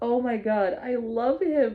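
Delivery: choked up, tearing up with emotion. Reacting to a book passage just read aloud, tearing up. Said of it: "I'm actually tearing up".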